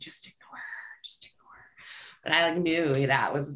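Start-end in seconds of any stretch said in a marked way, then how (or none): 0.0-2.2 very quiet, barely voiced whisper. Retelling what a friend whispered while doing math homework: imitating a whisper. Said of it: "she was whispering to me".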